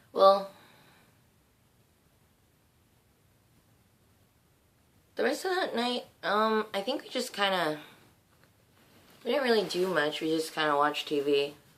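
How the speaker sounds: raspy sleepy voice. Recapping the past week right after waking up: raspy tired wake-up voice. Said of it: "my voice is kinda raspy-ish".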